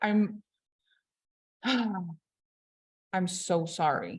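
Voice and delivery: deeply sincere, very slow, very drawn-out "sorry". Speaker shows how only the leader can apologize: imitating a heartfelt apology. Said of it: "then you feel it".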